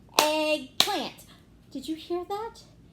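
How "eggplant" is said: loud, each syllable clapped out. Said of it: "One more time".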